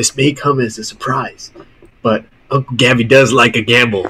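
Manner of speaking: hushed whisper in a character voice. Voicing Gabby, who sees Therese itching for his bow: Gabby whispering. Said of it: "he kinda whispers".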